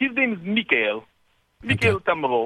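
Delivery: put-on Russian accent character voice. Asked by others for the Russian one, showing off a Mikhail Tamarov Russian voice. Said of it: "Give us the Russian one".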